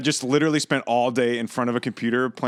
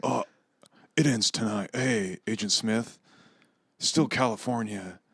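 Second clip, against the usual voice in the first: put-on laid-back actor voice, quieter; 5 dB quieter than usual. Doing a Keanu Reeves impression of his movie lines: Keanu Reeves impression. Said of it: "Keanu's like".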